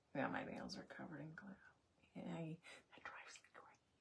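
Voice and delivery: very quiet, soft, breathy whisper to herself. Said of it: "Don't know why I'm whispering".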